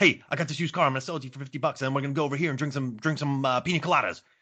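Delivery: rapid patter. Retelling what one man told another about screen time; fast-talking demonstration. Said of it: "The key is to talk really fast".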